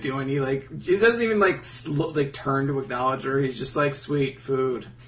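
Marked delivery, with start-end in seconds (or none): none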